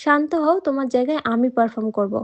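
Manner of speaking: plain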